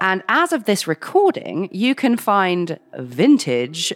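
sarcastic scare-quote tone on vintage. Host on the show mentioning jackets sold online, putting air quotes on 'vintage'. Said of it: "you can hear the air quotes in my voice".

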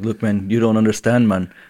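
half-landed put-on Irish brogue drifting into Jamaican. Retelling what a man said back to friends razzing him, put-on Irish accent. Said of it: "Is that your Irish?".

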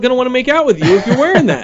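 mock high, loud scolding yell.

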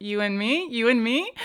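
plain

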